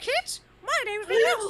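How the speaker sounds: very high-pitched cartoon mouse voice. Joking that a game character sounds like Mickey Mouse: Mickey Mouse voice. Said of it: "Van Zeke sounds like Mickey Mouse".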